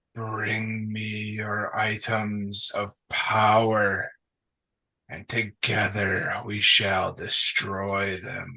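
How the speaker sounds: whispering voice. Voicing whispers a player hears in their ear: whispering voice. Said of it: "you hear whispers that say".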